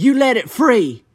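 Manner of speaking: put-on slightly mad tone. Retelling how Dewey Morton spoke after Cricket picked up the box: imitating someone kind of mad. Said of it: "Like he kinda mad".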